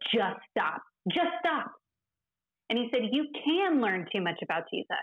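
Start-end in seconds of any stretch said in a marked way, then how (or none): 0.1-1.7 mock heated, raised, angry voice, swooping pitch. Recounting a male colleague in class who pointed at her, retelling his raised voice. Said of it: "raised his voice and said".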